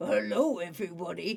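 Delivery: very deep, soft, dropped-low man's voice. Describing a late voice actor, imitating his very deep voice. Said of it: "a voice that is very deep".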